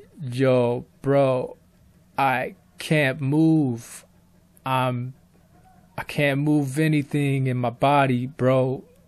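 soft, slow, level, toneless monotone drone. Recounting how he sounded to Leon when he could not move: retelling own monotone speech. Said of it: "I was talking in a monotonous tone".

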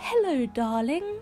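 high, warbled, trilling voice. Reading a woman's greeting to someone at breakfast, trilled. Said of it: "she trilled".

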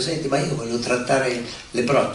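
ordinary delivery

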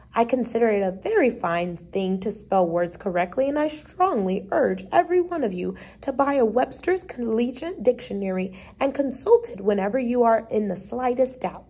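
plain

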